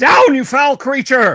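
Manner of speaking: very high yell with voice cracking. Narrating a game fight, voicing Athel as he attacks, voice cracking, crying out. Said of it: "voice cracks as he cries out".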